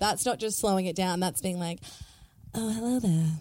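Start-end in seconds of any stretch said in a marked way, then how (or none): 2.5-3.3 put-on sexy, seductive come-on voice. Contrasting it with just slowing down, speaker demonstrates a sexy voice. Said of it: "that's just doing a sexy voice".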